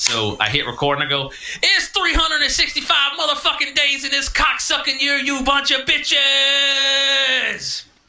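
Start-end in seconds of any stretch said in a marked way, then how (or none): 1.6-7.8 mock very high, high-energy, amped-up host voice. Retelling redoing a podcast intro after being told it lacked energy: energetic podcast intro. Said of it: "didn't have enough energy when I did my intro".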